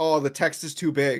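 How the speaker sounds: plain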